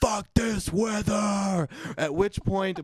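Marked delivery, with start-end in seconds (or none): 0.0-1.7 play-acted sudden high-pitched shriek of irritation. Retelling an irritated outburst that the neighbors overheard, retelling a scream. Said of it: "I screamed".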